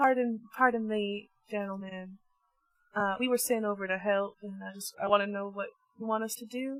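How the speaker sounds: play-acted timid, humble, meek soft-spoken voice. Approaching soldiers already working on it, said in a meek, timid voice. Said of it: "in a very meek voice".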